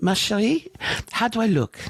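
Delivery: put-on French Moroccan accent. Retelling a mother asking how she looks: French Moroccan accent. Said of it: "my mom with a French Moroccan accent".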